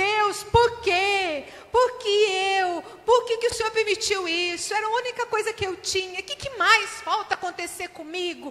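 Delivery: high, loud, desperate lamenting cry.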